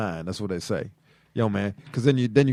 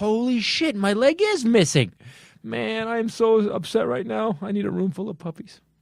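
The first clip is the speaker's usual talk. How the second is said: put-on very high, stunned, surprised outburst; 12 semitones higher than usual. Acting out a man told his lost leg was found: acting surprised. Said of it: "He's surprised".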